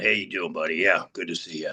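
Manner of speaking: low, dropped, deep voice. Describing a friend's voice before an audition: imitating Bob's voice. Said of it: "Bob's voice is way kinda like down that".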